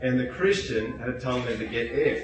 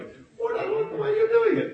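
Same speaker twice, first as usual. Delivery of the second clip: mock childish five-year-old voice, higher. Acting out how people refuse to listen: imitating a five-year-old kid. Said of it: "Like a five-year-old kid sometimes".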